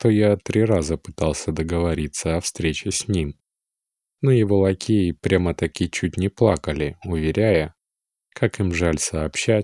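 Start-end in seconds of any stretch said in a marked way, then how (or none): none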